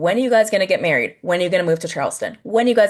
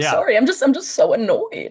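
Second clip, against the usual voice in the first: mock crying, high, swooping, tearful voice; 6 semitones higher than usual. Retelling what a woman said while crying to Amanda: imitating someone crying. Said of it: "she actually starts to cry".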